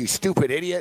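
angry yelling. Retelling a manager yelling at a clerk: imitating a manager yelling. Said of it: "yelling at".

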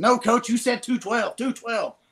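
mock shrill, piercing, high-pitched screech at full volume. Acting out a man who kept protesting to his coach, as Dexter Jackson screaming in a piercing voice. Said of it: "screaming 212 at the top of his lungs".

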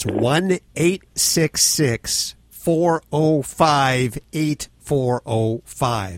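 very slow, clear, each item spaced out. Repeating a phone number for callers who found it too fast: slow and clear. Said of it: "nice and slow for everybody".

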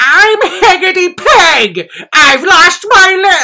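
scary witch voice, very high, very loud, slow. Recalling how mom read a children's book aloud, scary Heggity Peg voice. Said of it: "Like frightening, scary ass voices".

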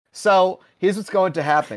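ordinary delivery

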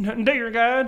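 put-on bayou-style accent with prayerful delivery. Imitating people who pray to God: sounds like Kermit the Frog. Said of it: "Kermit the Frog?".

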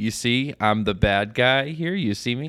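slow, gloating, mocking, taunting voice. Imitating a clapping fan in the pavilion: imitating a mocking fan. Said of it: "the mocky thing".

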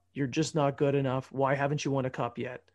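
ordinary talk

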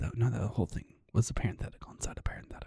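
fast, soft whispered aside. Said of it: "that's why I'm talking like this".

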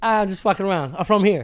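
usual speaking voice

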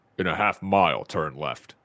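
deep character voice, dropped low. Asked to repeat it, reading a navigation line as a Master Chief impression. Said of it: "give me your Master Chief again".

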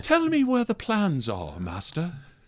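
put-on soft British accent. Imitating the actor in the suit reading Vader lines: David Prowse's soft British voice. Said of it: "he's crazy British".

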